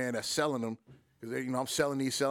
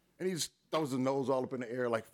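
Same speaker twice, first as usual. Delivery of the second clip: normal talking voice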